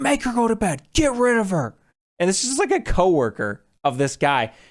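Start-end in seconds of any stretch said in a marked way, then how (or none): 0.0-1.7 put-on, shrill, very high drunken-sounding yell. Retelling how a drunk guy yelled at the crew, imitating someone yelling. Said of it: "he would like yell at the crew".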